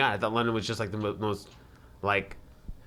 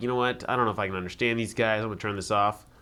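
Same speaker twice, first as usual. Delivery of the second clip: usual speaking voice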